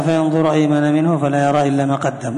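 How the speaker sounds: normal talking voice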